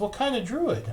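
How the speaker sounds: very high, thrilled, eager excited voice. Voicing a druid asking the kobold about its druid kind: rising excitement. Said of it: "voice like, is rising excitement?".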